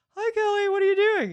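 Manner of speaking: very high, loud put-on teenage girl voice. Doing an impression of a girl from high school: imitating a high school girl. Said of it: "Here's an impression of a girl I went to high school with".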